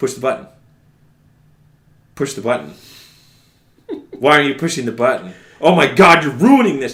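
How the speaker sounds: put-on rising anger. Retelling a game director's lines while the player ignores him, imitating growing anger. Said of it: "he begins to get angrier at you".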